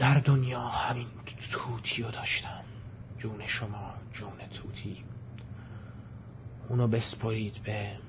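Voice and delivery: hoarse, quavering, trembling voice. Dying in bed, Dashakol speaks his last wishes, half-hoarse and trembling. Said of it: "با صدای نیم گرفته ی لرزان گفت".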